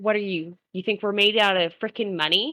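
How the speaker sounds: ordinary delivery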